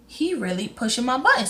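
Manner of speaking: plain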